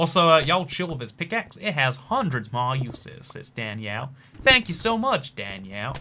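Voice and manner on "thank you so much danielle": put-on American accent. Thanking Danielle for a comment, in a put-on American accent. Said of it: "answered your question in an American accent".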